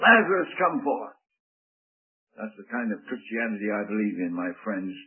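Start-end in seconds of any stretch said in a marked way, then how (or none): 0.0-1.2 acted, loud, ringing, commanding voice. Speaker acts out the call to Lazarus before listeners, retelling a loud command. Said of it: "in a loud voice, a voice of command".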